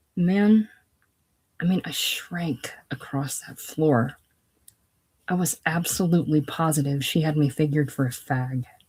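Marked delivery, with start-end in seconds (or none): none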